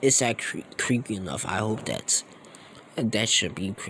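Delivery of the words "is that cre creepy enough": usual speaking voice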